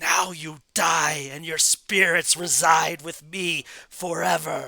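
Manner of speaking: loud, raging, furious scream. Game master voices a character who threatens the party, screaming in rage. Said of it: "She screams in rage".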